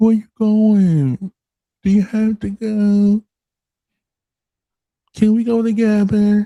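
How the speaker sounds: put-on childlike, very high baby talk. Demonstrating the baby voice thing the speaker mentions: baby voice. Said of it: "it's the baby voice thing for me".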